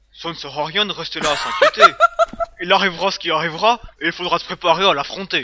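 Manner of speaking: booming, swooping big voice with swinging pitch. Reading a quiz quote aloud after being asked to do the voice: Hagrid voice. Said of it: "fais-le avec sa voix".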